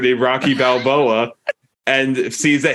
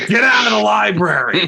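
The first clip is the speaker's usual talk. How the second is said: put-on high, barked shout; 8 semitones higher than usual. Retelling a film scene of yelling at people in a library: imitating a shout. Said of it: "He just was shouting at people".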